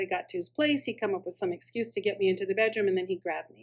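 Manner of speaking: plain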